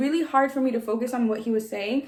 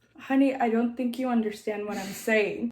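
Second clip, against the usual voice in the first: ordinary talk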